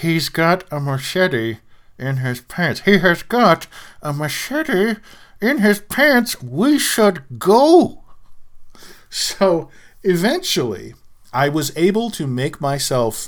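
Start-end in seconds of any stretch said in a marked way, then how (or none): 0.0-8.0 high words forced out through clenched teeth. Retelling a warning whispered to a buddy so no one would hear, through clenched teeth. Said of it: "through clenched teeth".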